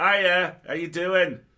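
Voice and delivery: booming, shrill, broad Yorkshire accent. Showing how a yorkshire character would talk: yorkshire accent. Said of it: "a Starfleet captain with that accent".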